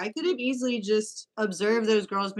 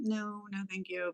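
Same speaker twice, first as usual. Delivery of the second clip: put-on uncomfortable, smiley, polite tone, quieter; 10 dB quieter than usual. Retelling how two girls turned down a stranger's photo: imitating an uncomfortable, smiley, polite refusal. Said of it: "uncomfortable, very smiley, very polite".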